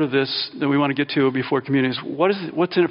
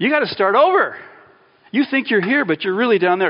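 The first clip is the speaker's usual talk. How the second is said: blunt, direct, biting, in-your-face sarcasm; 6 semitones higher, 3 dB louder than usual. Retelling how Jesus speaks to Nicodemus: imitating Jesus being blunt and direct. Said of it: "He's very direct".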